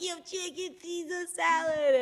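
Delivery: high, excited yell. Telling a story about hearing a call in the street, retelling yelling back. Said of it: "And now I'm like yelling back".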